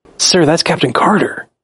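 put-on tone of deep reverence and respect. Quoting Hawkeye recognizing Captain Carter: reverent Hawkeye voice. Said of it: "he said it with such reverence in his voice".

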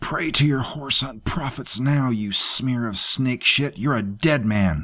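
gasped through clenched teeth. Narrator reads a captive woman's line to her captor, gasped through clenched teeth. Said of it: "She gasped through clenched teeth".

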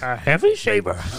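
poor, high-pitched little alien voice. Repeating the joke's punchline for the others: worst Yoda impression. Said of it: "the worst Yoda impression I've ever".

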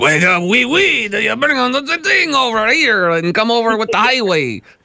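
very high Quebec French accent, stretched you. Comparing French and Quebec accents, speaker demonstrates: Quebec French accent. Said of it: "the Quebec one's like".

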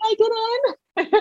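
very high hollered delivery. Retelling calling out to the midwife during labor: retelling own holler. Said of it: "So I kinda hollered out".

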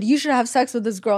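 normal talking voice

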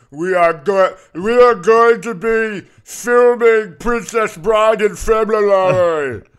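slow, loud giant impression, pitched high.

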